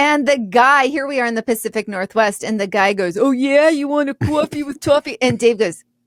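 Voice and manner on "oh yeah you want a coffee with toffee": put-on New York accent, pitched high. Retelling the drive-thru worker copying the order back: imitating a mimicked new york accent. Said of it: "he mimicked".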